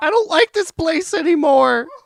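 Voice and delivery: very high, shrill, loud shrieking scream. Giving the other speaker a bonus update, imitating Cubby Bub's scream. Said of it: "and she screamed".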